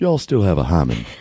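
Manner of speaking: courteous put-on Southern gentleman's accent. Reading a passage aloud to a co-speaker, switching to a Southern gentleman accent. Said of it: "I could do it like a Southern gentleman".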